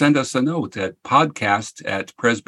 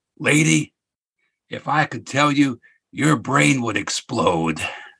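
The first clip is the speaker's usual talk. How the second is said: growled, rough-edged delivery; 3 semitones higher than usual. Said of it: "he growled".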